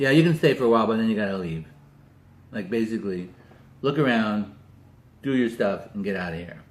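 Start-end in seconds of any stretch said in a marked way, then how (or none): 0.0-1.7 very gruff, irritated, loud, fast voice. Speaker retelling what a woman who answered said to him, very gruff voice. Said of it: "she says in a very gruff voice".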